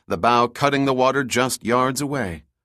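ordinary talk

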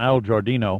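plain reading voice

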